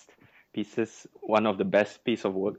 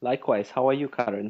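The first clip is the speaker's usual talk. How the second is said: sweet goody-goody voice; 4 semitones higher than usual. Podcast guest returning the host's greeting, in a good boy voice. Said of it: "Why do you have such a good boy voice".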